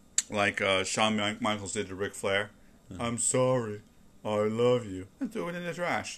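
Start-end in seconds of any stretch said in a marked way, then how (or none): 3.0-5.1 play-acted, sarcastic, taunting, mocking tone. Describing a wrestling moment, retelling a mocking line. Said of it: "And mockingly".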